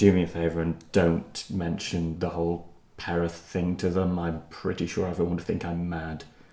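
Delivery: hushed confidential tone. Taking a companion aside in character, lowered voice. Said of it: "lower my voice and say".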